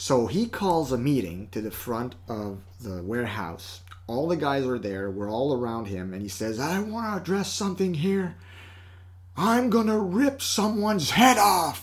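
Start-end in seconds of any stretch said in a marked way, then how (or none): 6.6-11.8 put-on big booming boss voice, pitched-up. Retelling a man addressing everyone at a warehouse meeting, imitating his booming voice. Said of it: "with his booming voice".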